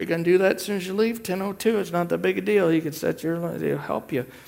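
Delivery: openly mocking delivery. Speaker urging listeners to set their alarms for prayer, mocking. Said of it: "I say that mockingly".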